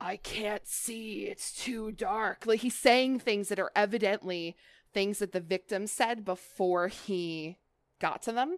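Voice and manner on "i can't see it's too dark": slow, raspy, terrifying, otherworldly monster voice. Describing the game character's voice lines, in a raspy, terrifying Fiddlesticks voice. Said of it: "you'll hear in like a very raspy, otherworldly, terrifying voice".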